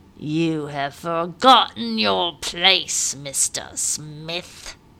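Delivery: low, very slow, deliberate growl. Master Wingfield answers Captain Smith in a low growl. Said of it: "in a low growl".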